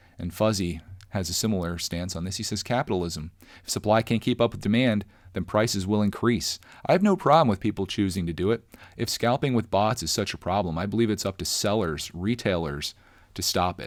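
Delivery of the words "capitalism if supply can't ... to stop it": normal talking voice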